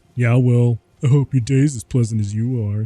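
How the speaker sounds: put-on sarcastic, mocking tone. Retelling a line used on an annoying person: imitating own mocking voice. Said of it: "the same voice that I use when I mock".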